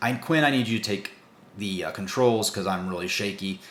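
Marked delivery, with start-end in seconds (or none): none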